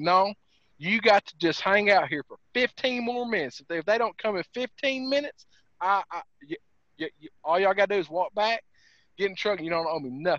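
ordinary talk

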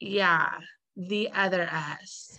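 slow, bone-dry, flat deadpan delivery. Retelling a TV scene, quoting Susan: imitating Susan's dry delivery. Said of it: "because it's Susan's dry delivery".

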